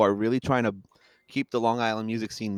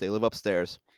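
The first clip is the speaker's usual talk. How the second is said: ordinary talk, nothing marked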